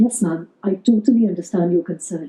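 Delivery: sympathetic, understanding tone throughout. Showing the difference between tones of voice: understanding tone. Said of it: "if I want to have a bit of an understanding tone, I would say".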